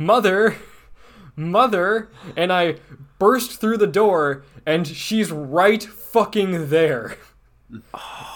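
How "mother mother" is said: mock yelling, higher. Retelling how the small vampire lady started yelling: imitating someone yelling. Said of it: "she starts yelling".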